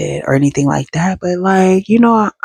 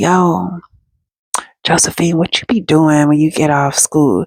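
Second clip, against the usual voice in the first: mock whispering. Retelling how someone leaned down and spoke into her ear: imitating someone whispering. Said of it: "leaning down to whisper in my ear".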